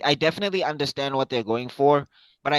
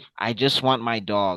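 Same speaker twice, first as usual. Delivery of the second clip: low, deep, flat, level, even monotone; 5 semitones lower than usual. Imitating Superman answering Lex, who is trying to troll him, in a monotone delivery. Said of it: "he has this monotone delivery where he's just like".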